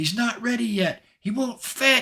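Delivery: high, loud yelling out, very high. Voicing a character calling out so three others can hear: yelling. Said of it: "yells out loud enough so the three of you can hear".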